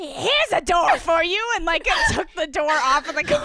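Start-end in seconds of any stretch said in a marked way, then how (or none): 0.0-1.4 put-on drawn-out old witch voice. Acting out Vivian's line to Molly while recapping the scene, Vivian as an old witch. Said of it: "Why does Vivian sound like an old witch?".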